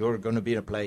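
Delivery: put-on Cuban-accented speech. Retelling what the man who ran Stage Door told him: Jack Romano's Cuban accent. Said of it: "he said in his Cuban accent".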